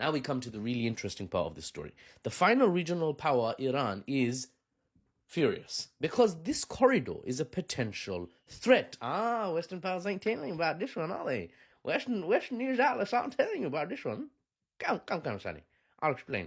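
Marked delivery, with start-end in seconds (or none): 9.0-16.5 rough, vague put-on Texan accent, pitched up. Narrating a story about regional powers, slipping into some sort of Texan accent. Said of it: "Maybe some sort of Texan accent".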